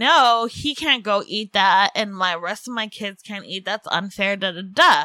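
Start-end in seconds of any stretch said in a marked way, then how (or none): none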